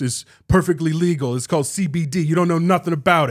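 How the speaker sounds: badly done aggressive voice, loud and high. Imitating a fighter defending his vape at a press conference: terrible Nate Diaz impression. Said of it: "It is a terrible Nate Diaz impression".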